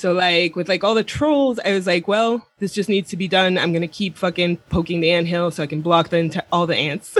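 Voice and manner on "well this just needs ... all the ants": ordinary talk, nothing marked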